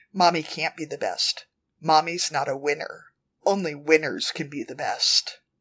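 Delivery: plain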